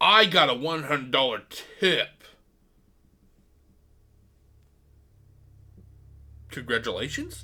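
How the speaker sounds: put-on condescending, patronizing tone. Retelling how a man talked about getting a hundred-dollar tip, imitating a condescending tone. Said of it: "he says it in such a condescending tone".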